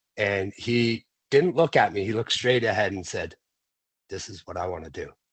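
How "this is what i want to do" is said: very quiet, soft, low-key delivery. Retelling what he said on walking into the gym: imitating a quiet remark.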